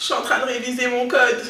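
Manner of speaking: put-on cutesy little child's voice, heavily overdone. Retelling what one said to a crush: imitating own child-like voice. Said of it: "Avec ta voix d-, d'enfant, là".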